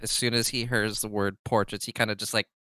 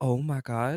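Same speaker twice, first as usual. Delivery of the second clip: sarcastic gasp of feigned shock and astonishment; 3 semitones higher than usual. Voicing a character who jokes about being called friend: sarcastic. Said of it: "Sort of saying it sarcastically".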